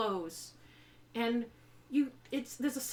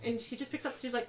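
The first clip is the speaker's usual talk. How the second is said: usual speaking voice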